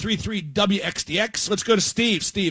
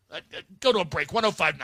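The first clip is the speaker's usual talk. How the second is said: normal talking voice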